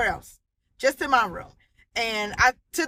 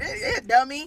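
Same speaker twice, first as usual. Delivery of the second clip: put-on laughing speech, higher; 4 semitones higher than usual. Retelling how he answered while laughing: imitating someone laughing while talking. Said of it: "he laughing like".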